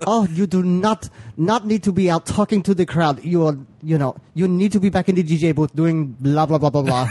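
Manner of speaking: high-pitched mock German accent.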